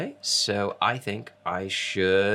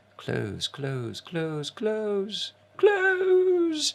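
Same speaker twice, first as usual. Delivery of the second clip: very high, slow spooky voice, every word stretched; 10 semitones higher than usual. Closing pop-up windows to find the chat window, in a spooky Halloween voice. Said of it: "When you talk in a Halloween voice".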